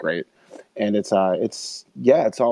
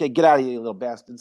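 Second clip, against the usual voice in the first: Italian wiseguy tough-guy mobster voice; 3 semitones higher than usual. Retelling a movie where a gangster-possessed snowman yells at the kids: Frankie Vale gangster voice. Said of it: "and now is like like his mobster".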